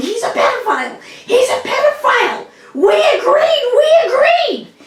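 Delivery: mock very high rising scream. Retelling what a woman screamed while storming in: imitating someone yelling and screaming. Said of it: "she's yelling and screaming".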